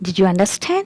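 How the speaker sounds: pitch rising on the last word. Teaching yes-no question intonation to learners, with rising pitch at the end. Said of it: "there should be rise in your pitch".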